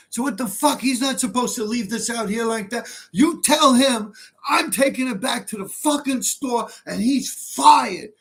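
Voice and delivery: furious, high, angry cursing yell. Retelling how a man yelled at the doorman: imitating angry yelling and cursing. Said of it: "he started yelling and cursing at the doorman".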